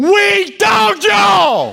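very loud, high, raspy top-of-the-lungs holler. Retelling yelling after fleeing enemies: imitating a yell at top of lungs. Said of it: "I yelled at the top of my lungs".

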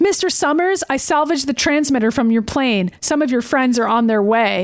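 ordinary delivery

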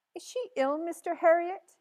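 quavering, trembling, high-pitched voice. Mrs. pickering asks mr. harriet, in a trembling voice. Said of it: "asked Mrs. Pickering in a trembling voice".

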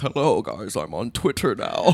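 low, creepy, friendly-sounding voice. Imitating O J Simpson announcing he joined Twitter: creepy O J Simpson impression. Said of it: "I hate his voice".

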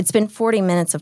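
ordinary delivery

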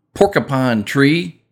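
porcupine character voice with Texas accent. Reading out a list of album titles, saying this band name in a Texas accent. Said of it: "it came out in a Texas accent".

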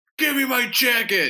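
very high, demanding shouting. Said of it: "got in a shouting match".

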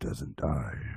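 very deep bassy voice. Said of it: "That was super bassy".

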